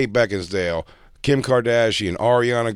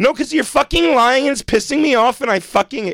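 play-acted worked-up furious rant, very high-pitched; 4 dB louder than usual. Imitating a girl confronting a man, imitating an emotional angry girl.

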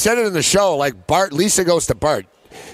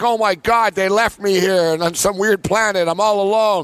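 mock sobbing, tearful crying voice; 3 semitones higher than usual. Retelling a cartoon scene where Bender gets stranded: imitating Bender crying. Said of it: "he starts, like, crying and stuff".

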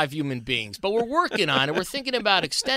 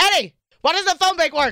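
put-on yelling voice; 10 semitones higher, 5 dB louder than usual. Asked for her best Dog impersonation, she does it: Dog impersonation, yelling. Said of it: "give me your best dog impersonation right now".

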